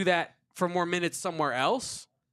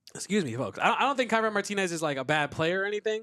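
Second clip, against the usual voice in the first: usual speaking voice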